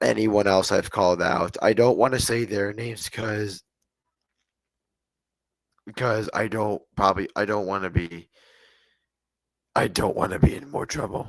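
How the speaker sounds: voice worn and strained. Apologizing to stream viewers after shouting a lot: voice worn from shouting. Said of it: "I'm sorry for my voice right now".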